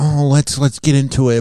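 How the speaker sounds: sorrowful voice. Speaker talking about Khloe mimics how she sounded: imitating Khloe sounding sad. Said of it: "She sounds so sad, like".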